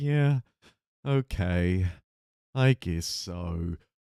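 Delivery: mock reluctant, low, very slow and drawn out. Describing how they agree to these guys: reluctant, tone dropped a bit. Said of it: "Reluctantly, I like kind of say like kind of kind of drop my tone a little bit".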